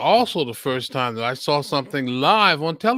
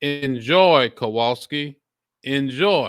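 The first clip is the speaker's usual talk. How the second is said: ordinary talk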